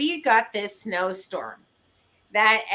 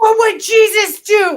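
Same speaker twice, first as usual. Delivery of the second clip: put-on scream, higher and louder; 12 semitones higher, 12 dB louder than usual. Retelling snowed-in driveway to neighbors: retelling a scream. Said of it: "And I screamed".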